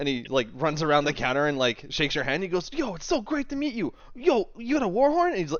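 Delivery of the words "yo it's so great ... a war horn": very high, elated, overjoyed gushing voice. Voicing a character who meets the adventurers: overjoyed Swain voice. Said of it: "the happiest person on the planet".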